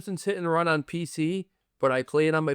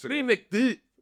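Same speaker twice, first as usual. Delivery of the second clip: put-on Scottish accent, much higher; 7 semitones higher than usual. Speaker shows how a phrase has to be said, in a scottish accent. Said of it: "it's got to be said like, you know, with a Scottish accent".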